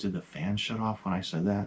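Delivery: acted whispering. Retelling what the daughter asked, imitating her whisper. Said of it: "She whispered".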